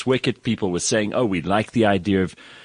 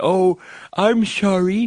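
put-on very high little old lady cartoon granny voice; 11 semitones higher than usual. Quoting the Treasury Secretary's apology, do Janet Yellen as a cartoon old granny. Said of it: "like the old granny voice".

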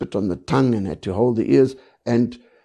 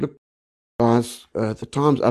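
ordinary delivery

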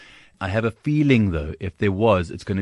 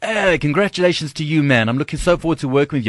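loud, pitched-up, calling out for all to hear; 8 semitones higher, 5 dB louder than usual. Retelling how Lee greeted the speaker with a big hug, imitating Lee's loud voice. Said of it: "like in this loud voice".

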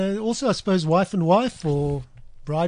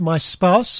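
ordinary talk, nothing marked

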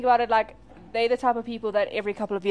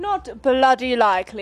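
put-on British English accent. Chatting with friends about a royal story, toss in a line: English accent. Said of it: "English accent".

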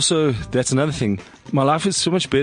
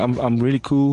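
usual speaking voice

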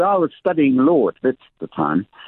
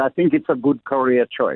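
put-on German accent. Retelling what a law professor said to a student: German accent. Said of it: "he had a German accent, by the way".

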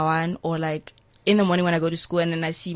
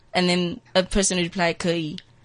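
ordinary talk, nothing marked

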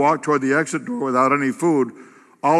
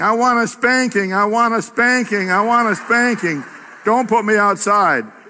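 put-on high screaming little girl pleading, kicking-and-screaming; 7 semitones higher than usual. Retelling how a girl screamed as she was carried out the back door, imitating screaming. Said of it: "She began screaming".

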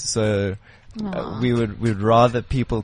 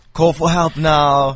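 loud, angry, aggressive shout, pitched up; 5 semitones higher, 6 dB louder than usual. Imitate Vinnie Jones taking people through CPR step by step, in a put-on angry, aggressive voice. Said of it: "in this angry, aggressive voice".

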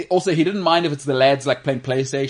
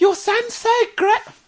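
put-on eager voice, much higher. Describing types of parents, imitating one of the moms: imitating over-enthusiastic mom.

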